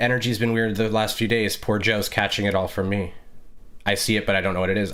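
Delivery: ordinary talk, nothing marked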